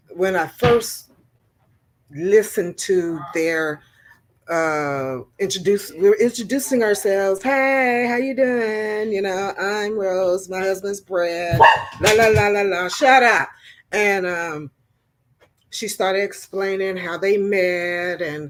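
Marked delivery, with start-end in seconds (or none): 7.4-12.9 mocking put-on persona voice, affected manner. Retelling how Rose introduced herself: imitating Rose's put-on persona. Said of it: "she does put on the persona".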